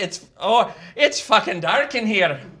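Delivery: put-on, attempted Irish accent. Speaker acts out a man crying out from his coffin, in an attempted Irish accent. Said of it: "I gotta do this in an Irish accent".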